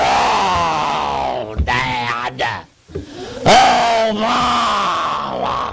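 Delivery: very low, slow, creaky bear grumble. Acting out kids grumbling at Mom and Dad, imitating a grizzly-bear grumble. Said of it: "They sound like a grizzly bear".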